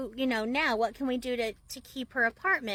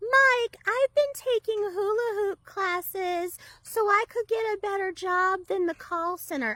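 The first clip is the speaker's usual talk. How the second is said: put-on high, slow, sheepish, childlike little voice; 8 semitones higher, 3 dB louder than usual. Retelling what she told Mike about the rent money: imitating Amy's sheepish childlike voice. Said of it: "sheepishly, literally puts her finger in her mouth".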